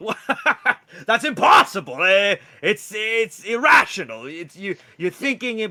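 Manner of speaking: high, loud, defensive voice. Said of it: "You're being really defensive right now".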